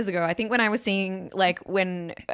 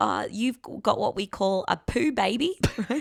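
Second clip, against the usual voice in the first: put-on Australian doctor accent. Retelling an emergency doctor's diagnosis, in a put-on Aussie doctor accent. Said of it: "this is fucking Aussie doctors for you".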